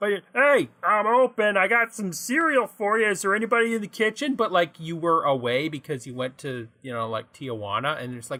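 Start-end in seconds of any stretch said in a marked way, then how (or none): 0.0-4.3 high, small, robotic little-man voice. Acting out a little robot man inside a cuckoo clock: little robot man voice. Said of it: "Am I just going to keep doing this voice?".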